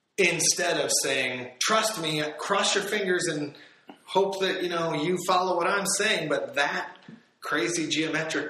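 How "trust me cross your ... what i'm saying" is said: exaggerated, overly sarcastic put-on voice, pitched up. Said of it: "I'm being overly sarcastic when I say this".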